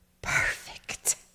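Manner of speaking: whispered. Retelling how a man grabbed a woman's foot mid conversation: retelling a whisper. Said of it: "and whispered".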